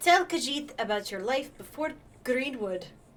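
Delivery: bad, put-on, vaguely Russian accent. Voicing a Khajiit's dialogue after apologizing for it: terrible Khajiit voice. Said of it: "I have a really terrible Khajiit voice".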